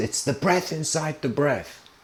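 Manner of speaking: mock sudden shout, instant, with no hesitation. Retelling a disciple's instant shouted answer to his teacher: retelling a student's shout. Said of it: "instantly responds and shouts".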